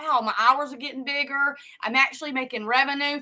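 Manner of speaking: normal talking voice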